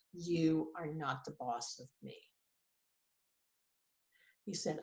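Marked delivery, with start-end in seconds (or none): 0.2-2.2 flat deadpan delivery, lower and quieter. Retelling a husband's reply to a list of chores: imitating a deadpan reply. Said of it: "with this deadpan look and said".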